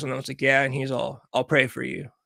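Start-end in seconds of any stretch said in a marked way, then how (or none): 1.3-2.1 put-on dead-serious tone, lower pitch. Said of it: "he was dead serious".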